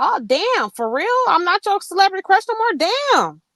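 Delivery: high, hurt, wounded disbelief, sounding stung. Retelling how someone reacted when he was hurt: imitating someone hurt. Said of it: "when he was hurt".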